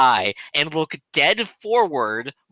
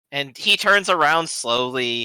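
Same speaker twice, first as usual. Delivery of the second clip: usual speaking voice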